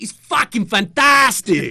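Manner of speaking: put-on loud, high, shrill, booming, blurted German accent. Retelling a live podcast interview, quoting a guest's reply in German accent. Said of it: "in his distinctly German accent".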